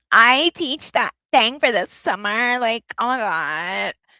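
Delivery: put-on Valley Girl voice, "God" drawn out. Mocking how another speaker imitates people: Valley Girl voice. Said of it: "when she imitates anyone's voice".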